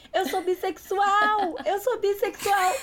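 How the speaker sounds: put-on very high, drunken, partying hollering shout. Retelling a party night, reenacting shouting to friends: retelling a drunk shout. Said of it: "completamente bêbada, gritando".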